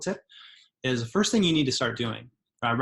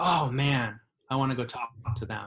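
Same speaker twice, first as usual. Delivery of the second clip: ordinary talk, nothing marked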